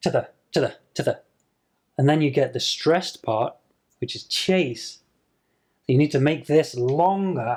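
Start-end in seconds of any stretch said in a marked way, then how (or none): 0.0-1.2 said fast, words reduced. Teacher demonstrating how small words get reduced in speech, said very quickly. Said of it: "you can say it very quickly".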